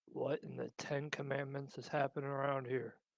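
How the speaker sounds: low, soft muttered aside. Playing a character who walks through, jaw dropped: muttering to himself. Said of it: "he mutters to himself".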